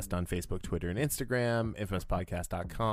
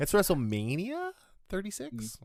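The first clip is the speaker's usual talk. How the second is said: sarcastic, mocking upward inflection, pitched higher; 12 semitones higher than usual. Showing how to say the event's name sarcastically: sarcastic rising question intonation. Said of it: "Going up at the end with the question".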